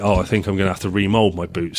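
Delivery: ordinary talk, nothing marked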